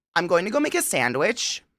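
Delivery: Canadian accent, pitch lifting upward on sandwich. Explaining canadian intonation with a statement: question-like rise on "sandwich". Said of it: "It sounds like I'm asking you a question, but I'm not. It's a statement".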